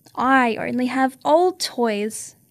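ordinary delivery

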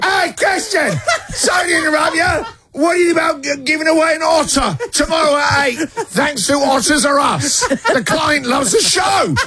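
mock shrill, very high, bellowing shout. Describing a woman at work who bellows down the phone: imitating a bellowing colleague. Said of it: "who bellows".

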